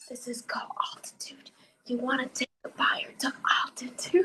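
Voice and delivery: whispered, low and hushed. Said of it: "he's whispering".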